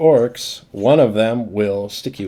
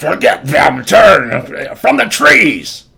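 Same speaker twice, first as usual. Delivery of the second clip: very loud, slow, drawn-out barked delivery; 7 semitones higher, 8 dB louder than usual. Voicing the group's leader ordering the group of four: barking out orders. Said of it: "bark out orders".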